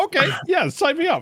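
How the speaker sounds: high, eager, excited cheering tone.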